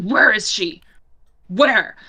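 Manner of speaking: words growled out hard. A game master voices a man heard near his tent, growling. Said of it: "you hear as he growls".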